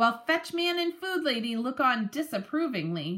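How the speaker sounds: plain reading voice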